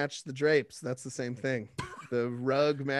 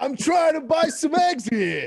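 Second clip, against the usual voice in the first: very high, very loud, shrill, dumb-sounding put-on Brooklyn accent; 13 semitones higher, 9 dB louder than usual. Retelling a store encounter with a lady, stupid put-on Brooklyn accent. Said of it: "that stupid Brooklyn, hey, whatever accent".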